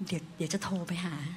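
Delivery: whispered. Retelling what a man whispered after running after someone, whispered. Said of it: "เขาก็กระซิบบอกว่า".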